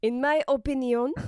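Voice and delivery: mock French accent on 'opinion'. Showing the other speaker how they like to say opinion, in a French accent. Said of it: "Sometimes when I say opinion, I like to say it like that".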